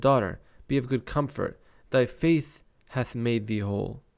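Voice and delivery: ordinary talk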